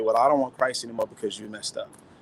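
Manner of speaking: plain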